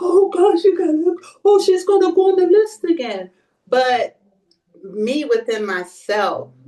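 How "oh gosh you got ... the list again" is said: tearful, very high, raised crying lament. Retelling the words of the lady in the next bed: imitating someone crying. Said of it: "she was crying".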